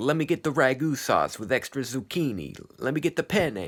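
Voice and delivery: put-on comic Italian accent, pitched high. Retelling a dream, imitating a woman ordering pizza: lady's put-on Italian accent. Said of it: "this lady was like doing an Italian accent".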